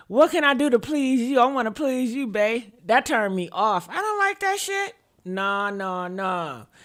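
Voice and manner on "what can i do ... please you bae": mock overeager, too-eager, pleading voice. Mocking men who ask how to please her: imitating a man eager to please.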